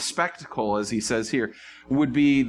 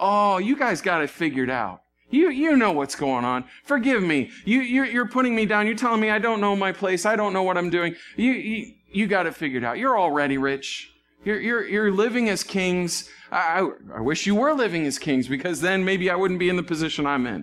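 very sarcastic throughout, pitched-up jabbing tone; 7 semitones higher than usual. Retelling a letter's words to a church, sarcastic Paul.

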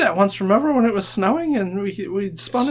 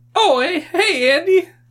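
put-on kid's voice, louder; 9 semitones higher, 3 dB louder than usual. Narrating a scene, voicing a thirteen-year-old girl getting into the back seat: kid's voice. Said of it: "Same voice".

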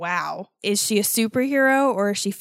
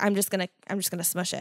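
put-on calm, quieter, lower, faster; 2 semitones lower, 6 dB quieter than usual. Retelling a woman's reaction in a story, imitating her calm voice. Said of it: "she's like real fucking calm".

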